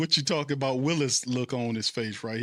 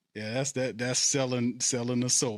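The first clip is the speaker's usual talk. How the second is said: normal talking voice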